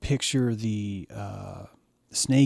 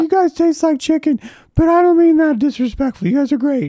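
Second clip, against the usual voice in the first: put-on screaming snake creature voice, higher and louder; 9 dB louder than usual. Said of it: "It's like".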